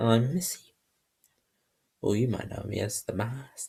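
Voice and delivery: put-on clear, strong Scottish accent. Summing up a Doctor Who character's role, Missy impression, Scottish accent. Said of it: "Scottish voice".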